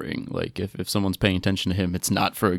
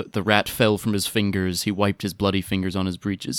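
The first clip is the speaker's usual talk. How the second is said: usual speaking voice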